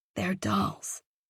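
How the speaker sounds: quiet, soft, hushed whisper. Reading a story aloud, the narrator whispers to Jacob. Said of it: "I whispered to him".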